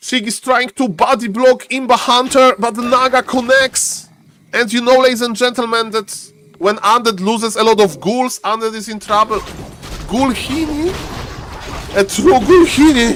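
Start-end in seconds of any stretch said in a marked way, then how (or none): 10.0-13.2 high commentator voice cracking midway. Commentator calling a game to the audience, voice cracking. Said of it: "my voice is cracking".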